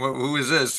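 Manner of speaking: plain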